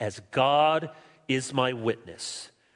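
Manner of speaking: grave, very solemn, low and slow. Speaker voicing Paul's words to the people he prays for, very solemn. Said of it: "And Paul says very solemnly".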